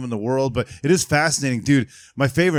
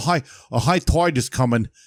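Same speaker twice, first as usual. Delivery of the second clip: put-on old island locals' dialect. Describing how people from an island talk: imitating island locals' speech. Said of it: "and they sound like that".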